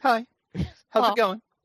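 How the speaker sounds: subdued, very high, low-key little voice. Imitating another speaker's greeting from a moment ago: imitating a low-key greeting. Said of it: "You were just so low-key. You're just like".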